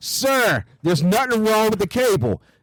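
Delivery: high-pitched, insistent yelling. Retelling what a man said about the cable over a blasting tv, retelling a yell. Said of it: "I'm yelling to you while I'm talking".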